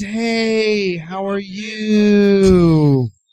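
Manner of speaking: slow, drawn-out vocal fry.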